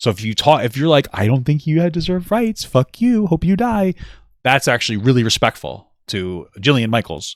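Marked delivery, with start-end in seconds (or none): 1.1-4.0 put-on very high, cutesy baby talk voice. Joking that anything said in a baby's voice sounds respectful: baby voice. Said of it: "because I said it like a baby would hear it".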